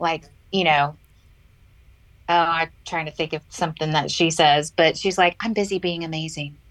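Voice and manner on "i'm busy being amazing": put-on whisper under the breath, quieter. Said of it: "the way she whispers things to people, like, under her breath".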